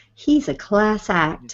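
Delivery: very slow, warm, commanding, stentorian delivery. Imitating a podcaster who praised someone as a class act: warm Cote voice. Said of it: "the warm Cote voice".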